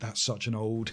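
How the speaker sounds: put-on, very quiet, hushed, fed-up exasperated groan. Recalling their reaction to an old South Park joke: retelling an exasperated groan. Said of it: "I remember groaning".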